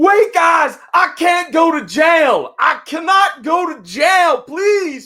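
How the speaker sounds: hollered out, very high, loud and shrill. Retelling how a man dragged off by deputies yelled; imitating a man yelling. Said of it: "this dude's yelling".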